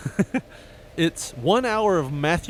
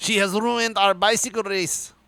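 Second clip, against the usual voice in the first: worst fake French accent, laid on, pitched high; 5 semitones higher than usual. Acting out a comic bit alongside another speaker, in a bad French accent. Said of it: "This is the worst French accent".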